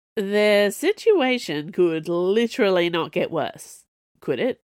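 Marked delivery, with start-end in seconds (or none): none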